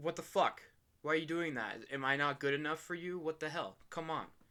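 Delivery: acted, worked-up, really upset outburst. Retelling how Dio reacts when his kiss is rejected: imitating upset Dio. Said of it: "Dio gets really upset about it".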